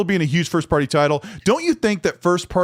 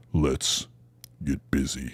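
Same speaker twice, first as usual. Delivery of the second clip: very deep, bottom of the range, quiet voice; 8 dB quieter than usual. Showing full vocal range from low to high, starting with the: lowest possible voice. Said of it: "That's about as low as I can go".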